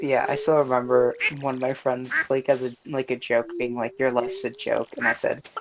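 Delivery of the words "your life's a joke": ordinary delivery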